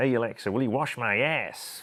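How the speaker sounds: best attempt at a put-on American accent. Showing how to give a voice-activated toilet seat a command, in your best american accent. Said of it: "in my best American accent".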